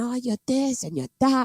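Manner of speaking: fast, rattled-off, angry ranting tirade. Retelling how a man went into a tirade on him: retelling a tirade. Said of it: "He went into some tirade on me".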